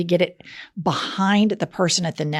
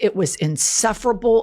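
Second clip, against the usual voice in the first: ordinary talk, nothing marked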